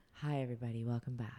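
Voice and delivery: sexy, sultry tone. A podcast host demonstrates a welcome-back opening for the show in a sultry voice. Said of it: "sultry voice".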